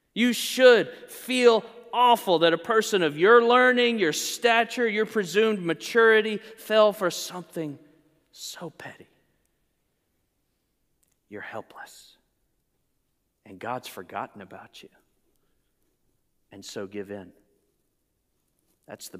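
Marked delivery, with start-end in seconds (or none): 0.1-17.3 whispered, tempting tempter voice. Speaker acting out Satan tempting a struggling believer, whispering in your ear. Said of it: "he whispers in your ear".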